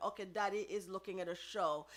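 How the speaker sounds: ordinary talk, nothing marked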